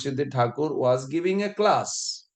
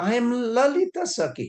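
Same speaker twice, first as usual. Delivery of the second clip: very high, slow, put-on woman's voice; 9 semitones higher than usual. Retelling a story where a man dressed as a woman says who he is: imitating Gangadhar Bhattacharya's voice. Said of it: "I'm trying to pretend her his voice".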